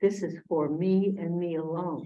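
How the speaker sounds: ordinary delivery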